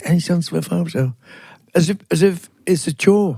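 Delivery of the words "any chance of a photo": put-on timid, meek voice. Retelling a young lady at a station asking for a photo: imitating someone asking timidly. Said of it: "and very timidly".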